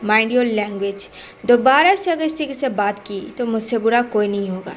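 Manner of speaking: ordinary delivery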